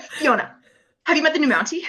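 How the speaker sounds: put-on, dead serious tone. Quoting a TV scene on the phone, imitating Rosemary: put-on serious. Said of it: "she's so serious".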